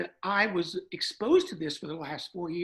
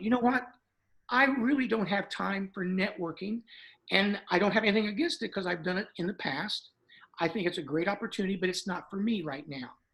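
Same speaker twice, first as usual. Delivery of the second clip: ordinary talk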